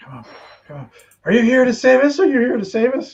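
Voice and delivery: quick, high, rushed, very nervous babbling. Voicing the people who see Draymond arrive, talking very quickly and very nervously. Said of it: "talking very quickly, very nervously".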